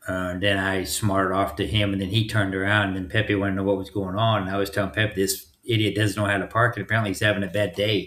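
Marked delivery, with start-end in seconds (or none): none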